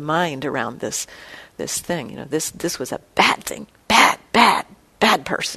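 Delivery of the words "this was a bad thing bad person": harsh, scolding, self-condemning tone. Showing how one tells oneself off after doing something bad: harsh tone toward oneself. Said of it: "with a kind of a harsh tone in the voice".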